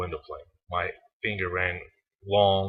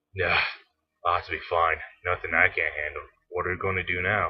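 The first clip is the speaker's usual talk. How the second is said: groaning, dismissive, shrugging-off tone. A passenger brushes off the program's concern after the vessel's damage, groaning dismissively. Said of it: "Passenger sir, / I waved his concerns off".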